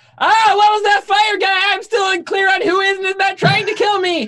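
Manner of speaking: very high, bewildered, panicked shriek. Playing a character caught among attackers, screaming in character. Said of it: "so I'm gonna scream".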